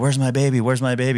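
acted-out woman screaming, crying out. Recalling a training drill, acting out the woman pinned by a car, imitating screaming. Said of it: "she was screaming the whole time".

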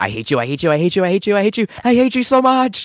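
very high frantic meltdown, swinging wildly in pitch. Describing an anime scene, imitating Nui freaking out. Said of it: "as she's just freaking out".

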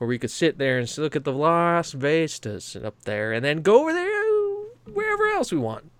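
long, stretched-out, swooping Texas drawl. Speaker demonstrating how he shifts into Southern accents: long Texas drawl. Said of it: "having a kind of a long speaking Texas accent".

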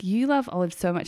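ordinary talk

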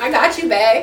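put-on valley girl speech style. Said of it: "We gotta hear it".

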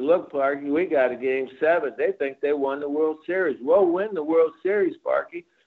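ordinary talk, nothing marked

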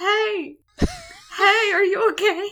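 loud, high, very slow, drawn-out calling yell. Recounting a scene where a kid yells down at robots fighting underwater, imitating a kid yelling. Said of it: "is just above yelling".

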